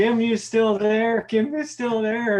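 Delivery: yelled, screaming, repeated twice. Retelling a friend fleeing a bear, imitating someone screaming. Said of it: "he was screaming at me".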